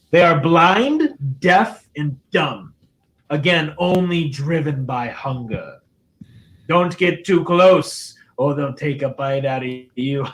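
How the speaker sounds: put-on devil voice. Voicing a devil axe answering a player in their head: voicing the devil axe Bitter Breath. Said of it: "Bitter Breath respond to you. He says".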